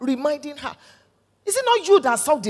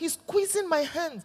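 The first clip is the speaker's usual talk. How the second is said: ordinary talk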